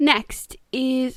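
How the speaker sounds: mild, half-shouted yell on "next". Announcing the next book to viewers, screaming the word next. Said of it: "I didn't mean to scream next at you guys".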